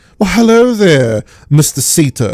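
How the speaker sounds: put-on charming villainess voice. Retelling an audio drama scene, imitating Madame Salvadori. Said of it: "And she's all like".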